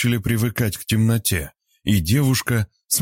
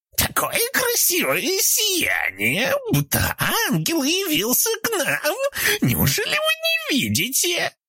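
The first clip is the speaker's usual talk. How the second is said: very high, hoarse, raspy, swooping, rapturous, admiring woman's voice. Reading a story, voicing an unseen woman marveling at the girl, in a raspy, admiring female voice. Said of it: "восхищенный хриплый женский голос".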